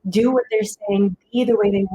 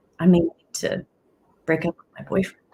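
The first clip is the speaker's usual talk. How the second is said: put-on grave, sorrowful, sad and serious delivery; 3 semitones lower than usual. Retelling what a woman said to the speaker after training: retelling a sad, serious tone. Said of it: "in this really sad, serious tone".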